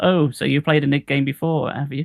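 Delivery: ordinary talk, nothing marked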